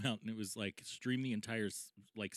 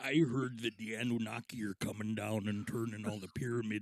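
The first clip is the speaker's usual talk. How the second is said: put-on heavy, laid-on Midwestern accent. On a podcast, offering a new bit in a Jesse Ventura impression. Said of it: "a Jesse Ventura take".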